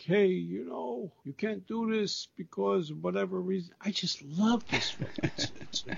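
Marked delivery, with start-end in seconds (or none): 0.0-3.7 put-on heavy Brooklyn mobster accent, higher. Retelling gangsters threatening the people putting on the show: heavy Brooklyn gangster voice. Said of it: "doing that heavy Brooklyn Nine thing".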